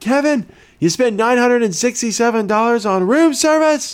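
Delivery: high, angry fatherly yell.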